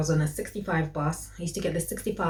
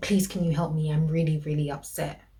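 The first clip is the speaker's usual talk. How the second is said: put-on hysterical, desperate pleading tone. Retelling walking into a shop in hysterics, imitating own desperate pleading. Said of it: "whilst I was, like, in that state".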